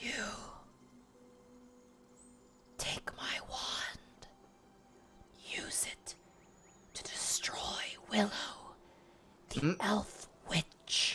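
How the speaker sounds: breathy, gasping ghostly whisper. Voicing a voice from a grave that gasps: gasping voice of a spirit. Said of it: "you almost hear it gasping. You hear a voice speak out".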